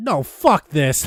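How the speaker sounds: mock fed-up, furious outburst, blurted out loud. Retelling an angry reaction while watching the movie: retelling an angry outburst. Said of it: "out loud, I was like".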